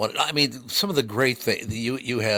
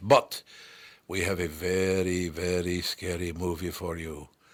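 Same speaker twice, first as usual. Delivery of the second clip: deliberately bad, very drawn-out horror-movie vampire voice; 3 semitones lower than usual. Announcing tonight's very scary movie in a sketch, bad Bela Lugosi impression. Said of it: "that bad an impression of Bela Lugosi".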